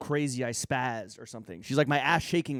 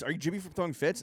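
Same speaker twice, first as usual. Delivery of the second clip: put-on mild called-out yelling; 4 semitones higher, 4 dB quieter than usual. Retelling two guys calling out from down the street: imitating guys yelling. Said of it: "so they yelled at you?".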